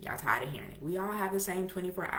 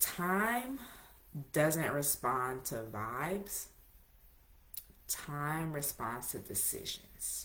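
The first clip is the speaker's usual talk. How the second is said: slow, soft, deliberate, word by word, "time" stretched; 3 semitones lower, 8 dB quieter than usual. Making a point to listeners and choosing to say it slowly. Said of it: "I must say this slowly".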